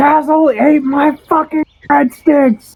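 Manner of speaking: shrill, very high-pitched, furious, angry yell. Playing a character complaining about stolen breadsticks: yelling in character. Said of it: "he's probably turned around yelling at Kendra".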